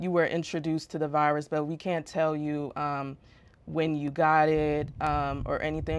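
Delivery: normal talking voice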